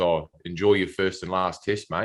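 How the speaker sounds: ordinary talk, nothing marked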